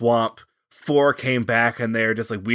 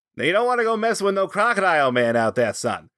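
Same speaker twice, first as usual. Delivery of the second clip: put-on raised-pitch Boston accent; 7 semitones higher than usual. Making up a character who warns people off, in a Boston Crocodile Man voice. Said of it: "like the Boston Crocodile Man who's like".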